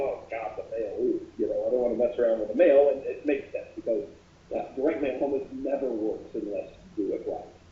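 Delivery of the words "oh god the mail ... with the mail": usual speaking voice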